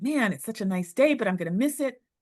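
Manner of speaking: mock slightly fed-up, let-down, mildly frustrated musing. Retelling getting lost on a nice day: imitating her own frustration. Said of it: "I was a little frustrated".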